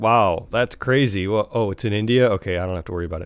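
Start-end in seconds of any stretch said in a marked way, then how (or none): none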